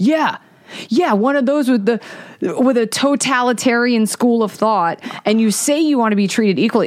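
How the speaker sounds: combative, heated voice, building and rising. Retelling what a man said to the speaker in an argument: retelling a raised voice. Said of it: "his voice is like raising".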